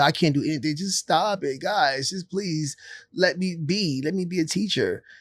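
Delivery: play-acted tearful, desperate, slow crying plea. Speaker acts out a teacher pleading with them: imitating a teacher crying. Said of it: "That cry, it was a cry like that".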